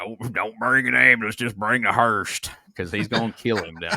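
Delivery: mumbling southern drawl. Describing a wrestler's threat, doing his Karl Childers impression. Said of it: "goes just full on Carl Childers from Sling Blade".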